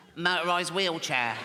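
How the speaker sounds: put-on silly young boy kid voice. Little Timmy answers his father's question about Christmas: Timmy voice. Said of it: "I promised Jane I wouldn't do the voice".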